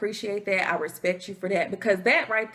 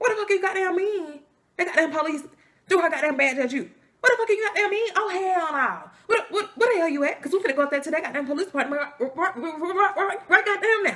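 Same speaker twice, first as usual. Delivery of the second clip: rapid-fire, pitched-up, outraged angry rant; 8 semitones higher than usual. The speaker retells phoning their dad after school, imitating dad talking fast. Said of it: "He be talking so fast".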